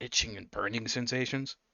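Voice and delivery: soft, close, leaned-in half-whisper. Voicing an old man asking the cleric something privately: half-whispering. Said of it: "he leans in close and whispers".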